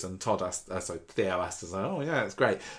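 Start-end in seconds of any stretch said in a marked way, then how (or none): 1.8-2.6 mock gritted-teeth, forced tone, higher. Retelling how Theo answered her, imitating a reply through gritted teeth. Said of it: "through gritted teeth".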